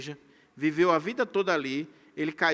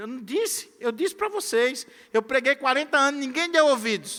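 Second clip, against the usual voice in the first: high, mock, taunting, crowing gloat; 8 semitones higher than usual. Voicing what a prophet might have said to his people: imitating someone mocking and gloating. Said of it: "estar zombando do povo de Jerusalém".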